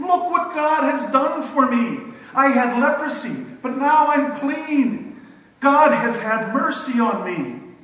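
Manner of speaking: put-on shouting while laughing. Imagining the healed man running down the road, acting out laughing shouting. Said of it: "laughing and shouting at the top of his lungs".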